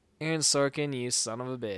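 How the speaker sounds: ordinary delivery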